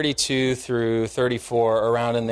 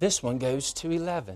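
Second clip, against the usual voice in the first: soft, lightly done put-on British accent; 7 dB quieter than usual. Speaker quotes a line to the audience in a British accent. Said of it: "if I say to you with a British accent".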